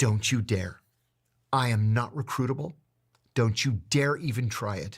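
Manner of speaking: mock furious, angry voice. Retelling a reply to an Israeli officer at a briefing: retelling a furious retort. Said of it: "I was furious".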